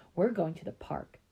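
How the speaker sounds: ordinary delivery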